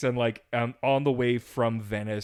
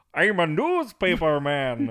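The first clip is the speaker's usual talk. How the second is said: put-on Norwegian newsreader accent, slow and sing-song; 4 semitones higher, 3 dB louder than usual. Asked to do a Norwegian newsman, in a Norwegian newsman accent. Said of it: "Do Norwegian newsman".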